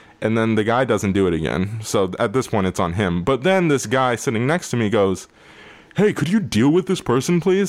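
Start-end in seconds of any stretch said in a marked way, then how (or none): 6.0-7.7 mock very loud call, pitched very high. Retelling a moviegoer beside him speaking up during the film, imitating loud talking. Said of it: "very loudly".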